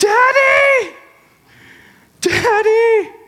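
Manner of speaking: put-on very high, loud child's yell.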